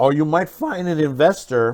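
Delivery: voice cracking. Explaining ways to fund a low-budget film, voice cracking. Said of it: "my voice cracked there".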